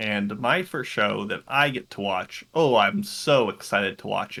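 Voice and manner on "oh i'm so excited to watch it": dripping with sarcasm, lower pitch. Announcing the first show to watch this season: heavily sarcastic. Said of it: "heavily steeped in sarcasm".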